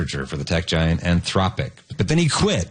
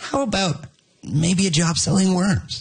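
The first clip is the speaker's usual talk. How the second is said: high-pitched, slow, hesitant AI assistant voice. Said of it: "they always sound like".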